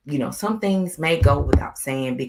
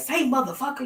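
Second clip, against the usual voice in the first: very high, put-on grandma voice; 12 semitones higher than usual. Retelling how a grandma talks, imitating grandma. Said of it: "my grandma be like".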